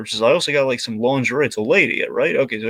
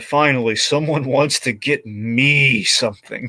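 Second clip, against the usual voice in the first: imitated exhausted, worn-out voice. Retelling a Santa's reply when asked what he wants: imitating George Wendt sounding exhausted. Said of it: "Just sounds so exhausted from the day".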